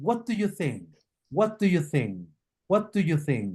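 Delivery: falling intonation, pitch dropping at phrase end. Demonstrating question intonation to listeners, falling intonation on questions. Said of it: "That's correct".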